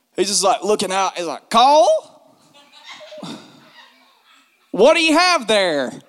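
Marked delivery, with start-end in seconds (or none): 1.5-5.9 put-on high-pitched, swooping old man character voice. Act out an old guy propped on the fence questioning Cole, as a Mr. Phillips impersonation. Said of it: "do my best impersonation of him".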